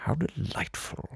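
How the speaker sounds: quiet period-drama villain voice. Describing animated film villains, the speaker voices one straight off Downton Abbey. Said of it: "the villain sounds like he or she just walked off the set of Downton Abbey".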